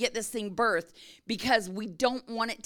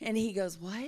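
ordinary delivery

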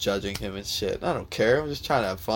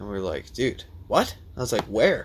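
ordinary talk, nothing marked

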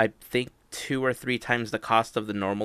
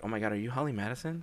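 hushed, half-whispered stage whisper; 7 dB quieter than usual. Retelling meeting someone at Disneyland, imitating own half-whisper. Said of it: "I kinda whispered it to her".

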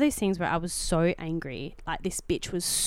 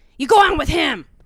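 full-volume, loud, high-pitched yelled shout; 9 semitones higher, 10 dB louder than usual. Retelling how a woman shouted back at a man, retelling a shout. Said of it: "shouts this".

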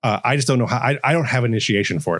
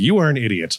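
snide, mean, sassy doctor voice. Replaying a turn as the doctor character: mean, sassy doctor voice. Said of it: "I just get to be mean and sassy".

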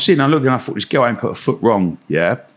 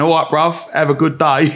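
put-on Cockney accent voice; 4 semitones higher than usual. Describing a talking turtle toy they made for a task, cockney turtle voice. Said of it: "a little green turtle with a Cockney voice going".

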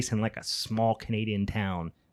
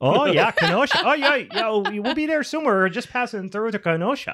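very high, loud, put-on Canadian accent; 12 semitones higher, 5 dB louder than usual. Showing how to get into a canadian accent: put-on canadian accent. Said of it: "That's how I get into my Canadian accent".

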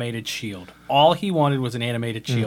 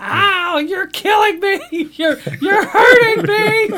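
very high, drawn-out pained scream; 8 dB louder than usual. Retelling how a cowardly animated shield reacted when hit, retelling a scream of pain. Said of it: "it screamed in pain".

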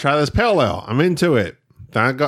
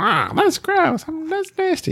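put-on very high, grossed-out little kid voice; 14 semitones higher than usual. Retelling tasting dad's beer as a little kid: imitating disgusted little kid. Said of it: "That's how you sounded?".

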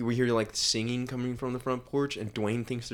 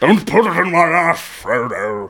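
booming, loud, high-pitched wizard bellow; 6 semitones higher, 16 dB louder than usual. Riffing on Frodo in GTA gameplay: Gandalf impression. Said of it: "Left field Gandalf impression".

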